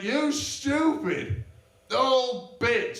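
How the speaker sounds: acted, very slow, drawn-out, high-pitched scream. Retelling screaming in an old lady's face while shaking her, retelling screaming at someone. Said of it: "I'm screaming in her face".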